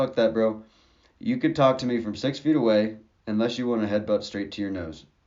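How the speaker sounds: ordinary talk, nothing marked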